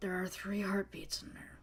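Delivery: hushed whisper. Voicing a character who leans in close to the group: whispering. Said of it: "motions everybody to come closer to her for a whisper".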